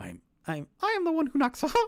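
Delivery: swooping, high cartoon mouse voice. Doing a run of voice impressions for listeners, in a Mickey Mouse voice. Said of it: "Mickey Mouse doing the Breaking Bad".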